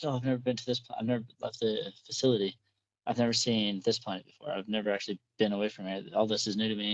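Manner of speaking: ordinary delivery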